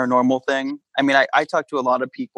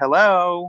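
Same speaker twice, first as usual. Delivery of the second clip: mock high, ghostly, pointed, passive-aggressive tone; 5 semitones higher than usual. Imagining a ghost waking the household over dishes: acting a passive-aggressive ghost. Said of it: "kind of passive aggressively".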